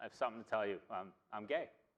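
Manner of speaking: ordinary delivery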